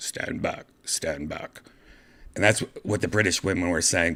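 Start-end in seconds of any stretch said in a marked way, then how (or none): 0.0-1.6 very quiet, slow, hushed mechanical robot voice. Recalling a shock machine's background announcement, imitating it in a robot voice. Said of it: "a robot voice like".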